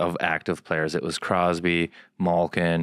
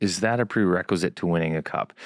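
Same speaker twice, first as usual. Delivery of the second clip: ordinary talk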